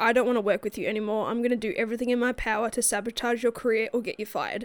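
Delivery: ordinary delivery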